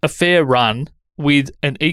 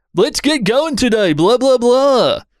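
very high, over-the-top hyped radio-intro voice; 11 semitones higher, 3 dB louder than usual. Advising how not to start an episode, mocking a high-energy intro voice. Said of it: "I don't know where that voice just came from".

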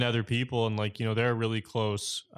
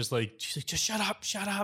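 put-on very high, drawn-out, cross shushing; 9 semitones higher, 3 dB quieter than usual. Retelling how the wife got mad at the old man: mock-angry scolding. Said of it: "getting mad at him".

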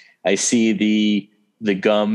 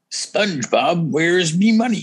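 pitched-up, piratey cartoon voice; 8 semitones higher than usual. Listing favorite cartoon characters, doing number seven: Mr. Krabs voice. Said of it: "The piratey voice".

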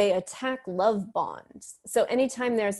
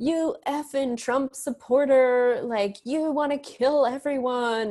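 mock hostile, attacking screaming; 4 semitones higher than usual. Describing a reply to writing about masks, the speaker imitates someone: mock screaming at you. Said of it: "you hear the tone like screaming at you".

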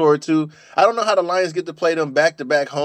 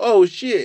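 yelling, sometimes higher pitched; 5 semitones higher than usual. Retelling how a quarterback yelled as a defender rushed him: imitating someone yelling. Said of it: "Geno Smith yells out".

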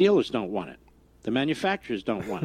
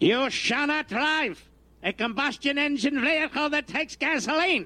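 put-on German accent, pitched very high; 11 semitones higher than usual. Mid-rant, acting out an order in a mock german accent. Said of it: "Puts it in the German voice".

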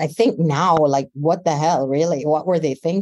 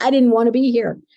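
mock yelling, high screaming at full pitch; 6 semitones higher, 3 dB louder than usual. Recounting screaming at a nurse after pulling out an iv: retelling a scream. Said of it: "and I'm screaming at her".

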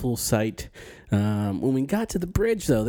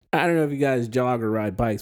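ordinary delivery

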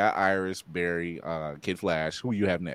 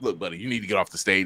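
mock threatening growl. Retelling a film scene where the actor plays it up: imitating a menacing Wolverine voice. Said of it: "he tries to do the most menacing Wolverine".

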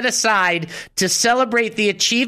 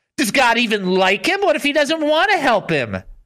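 play-acted jeering, scornful, mocking doubt; 3 semitones higher than usual. Acting out what people said mockingly about Jesus, retelling a mocking question. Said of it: "They asked mockingly".

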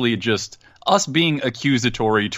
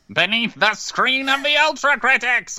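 very high, slow, drawn-out put-on villain voice. Asked to do a funny voice, proclaiming in a Skeletor voice. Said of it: "Do a funny voice. / Because I like sounding like Skeletor".

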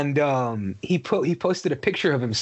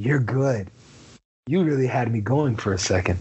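mock-amused smiling tone, much lower; 2 semitones lower than usual. Retelling what a man said to the Joker after taking the card, smiling remark. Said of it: "he smiles and goes".

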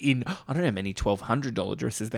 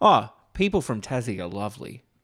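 ordinary talk, nothing marked

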